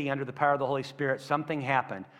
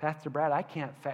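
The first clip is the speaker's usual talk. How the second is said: mock weak, feeble voice, quieter; 5 dB quieter than usual. Imitating people who say they cannot fast: imitating a weak, feeble voice. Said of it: "they always say it with that voice too".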